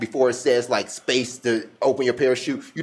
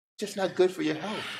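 mock very calm voice, higher and quieter; 6 semitones higher, 8 dB quieter than usual. Imitating another speaker telling you not to be emotional: imitating someone's very calm voice. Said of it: "He says it in the most calm voice ever".

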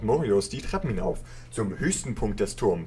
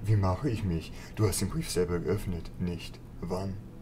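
soft, hushed mighty magus voice; 2 semitones lower, 5 dB quieter than usual. Voicing a game scene, the mage answers the greeting from the Kirin Tor: Medivh voice. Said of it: "Oh, großmächtiger, respektierter Magus [name], Herr von [name]. / Euer Name bedeutet Behüter der Geheimnisse auf Hochelfisch. Ich höre auch auf einige andere Namen, doch du kannst mich [name] nennen".

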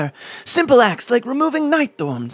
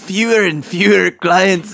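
deep put-on Scottish accent, dropping into Scottish vowels; 5 semitones lower than usual. Asked for your best Scottish accent, try Scrooge McDuck's Scottish accent. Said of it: "Give your best Scottish accent".

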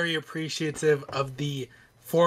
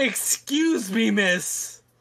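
high-pitched, demanding, entitled put-on tone; 6 semitones higher than usual. Mocking another speaker's request to a store worker: mocking Karen imitation. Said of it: "that sounded very Karen of you".

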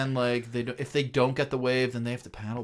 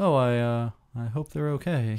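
utterly flat, emotionless deadpan announcer voice. Imitating the announcer's line about people's safety: imitating a deadpan announcer. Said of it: "the most deadpan person on the planet".

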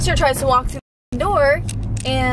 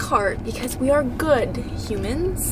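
ordinary talk, nothing marked

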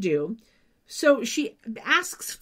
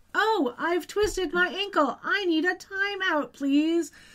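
high, slow, clunky, stilted fake complaining tone. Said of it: "supposed to be clunky".

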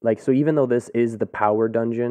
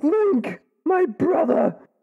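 put-on British accent, pitched very high. Describing a game cutscene where a character greets Link, Darunia with a British accent. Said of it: "I don't know why I gave him a British accent".

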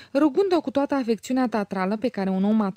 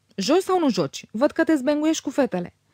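high, irritated, impatient outburst; 5 semitones higher than usual. A woman turns on a man: irritated outburst. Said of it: "izbucnia Aglaia iritată".

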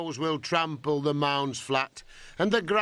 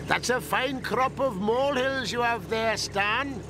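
high shout, called out across a distance; 7 semitones higher than usual. Reading a story aloud, a farmer drives up and calls out to Stan, shouting. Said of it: "shouted Mr. Jones".

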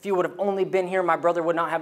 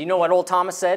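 usual speaking voice

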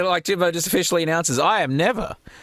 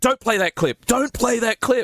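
mock shouting, higher pitched; 6 semitones higher than usual. Speaker retells a man yelling at the moderator: retelling a yell. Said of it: "starts yelling at the moderator".

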